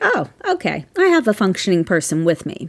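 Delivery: ordinary delivery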